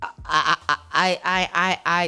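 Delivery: stuttering, stammering speech. Giving thanks after a crowded event, overwhelmed: stuttering. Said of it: "I'm still stuttering".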